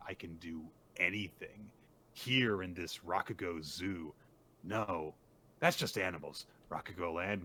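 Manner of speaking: normal talking voice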